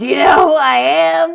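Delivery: put-on loud, distant, demanding drunk bellow. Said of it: "he goes".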